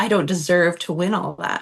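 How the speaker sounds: ordinary delivery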